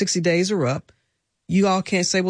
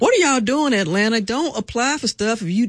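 put-on yelling, much higher pitch; 5 semitones higher than usual. Addressing atlanta listeners, imitating my mama yelling on the front porch. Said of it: "I'm yelling on the front porch with my head rag on".

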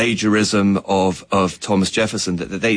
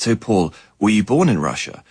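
put-on voice, almost a whisper. Retelling what a fan asked while walking in Harlem: imitating a near whisper. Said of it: "almost whispers in his ear".

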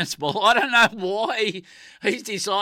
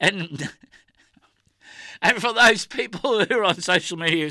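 talking through helpless laughter, words broken by giggles. Speaker addressing people on social media, laughing while talking. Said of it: "sorry, I can't stop laughing".

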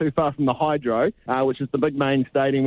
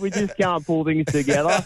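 put-on higher-pitched Australian accent. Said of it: "Do that in an Australian accent".

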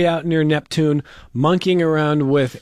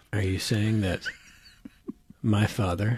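low, soft mock bleak movie drama. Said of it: "the whole movie was in that tone of voice".

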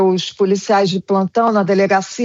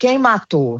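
normal talking voice

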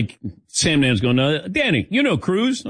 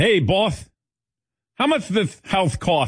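put-on lisping child voice, higher pitched; 6 semitones higher than usual. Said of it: "your son had that lisp".

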